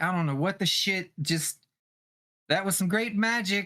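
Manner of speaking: loud, high cussing outburst. A character in the game, unable to see where anybody is, cusses with a raised voice. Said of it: "her voice is like raised".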